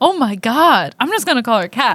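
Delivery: ordinary talk, nothing marked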